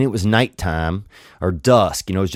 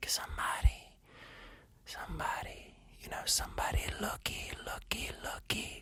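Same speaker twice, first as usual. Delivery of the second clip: soft, slow, hushed, coaxing little whisper; 10 semitones higher, 21 dB quieter than usual. Voicing your own crotch calling out to you in a whispering crotch voice. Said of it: "you hear your crotch start to whisper a little bit, whisper this like".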